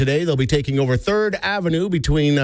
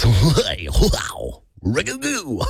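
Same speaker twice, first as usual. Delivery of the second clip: over-the-top radio host patter, swooping; 3 semitones lower than usual. Show host demonstrating what a put-on radio voice would sound like: over-the-top radio voice. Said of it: "if I were to put on a radio voice".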